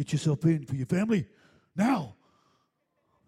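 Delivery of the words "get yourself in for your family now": put-on loud New Zealand accent. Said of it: "That was my New Zealand voice".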